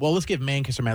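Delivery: ordinary talk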